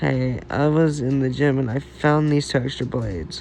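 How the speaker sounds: usual speaking voice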